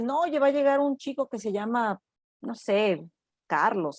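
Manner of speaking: normal talking voice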